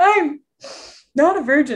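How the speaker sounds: high, slow, weepy speech through tears. Recounting a date, acting out crying in his car while confessing. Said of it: "just tears".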